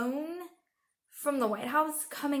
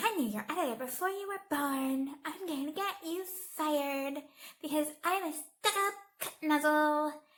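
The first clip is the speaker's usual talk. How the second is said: put-on mocking, immature-sounding voice. Retelling a political argument, mocking Kellyanne Conway: immature Kellyanne Conway impression. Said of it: "My impression of her is so immature".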